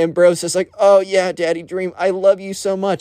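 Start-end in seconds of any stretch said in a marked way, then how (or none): 0.8-3.0 acted, mild, gushing half-shouted delivery. Retelling a classmate yelling at a body pillow in class: imitating someone yelling. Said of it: "He's full on straight up yelling this".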